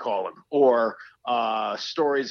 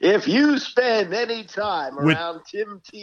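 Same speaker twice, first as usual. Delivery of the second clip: put-on very high, condescending broadcaster tone; 9 semitones higher, 4 dB louder than usual. Speaker imitates a TV announcer he found condescending, mock-condescending announcer voice. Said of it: "the way he said it was so condescending".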